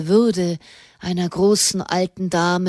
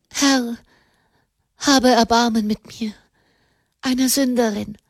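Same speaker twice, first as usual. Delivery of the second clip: gasping for breath, higher pitch; 4 semitones higher than usual. Narrating, a woman prays after receiving last rites; gasping for breath, praying. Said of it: "nach Atem ringend".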